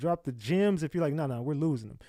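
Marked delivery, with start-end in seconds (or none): none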